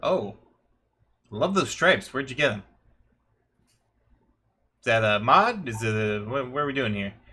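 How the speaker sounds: put-on leonine shapeshifter creature character voice. Narrator voices the Leonine shapeshifter speaking to a player's character. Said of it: "He's like".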